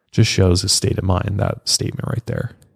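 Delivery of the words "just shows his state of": plain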